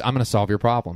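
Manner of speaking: ordinary talk, nothing marked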